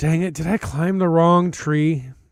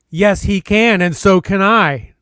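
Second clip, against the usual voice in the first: loud, yelled call. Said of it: "another voice yell up".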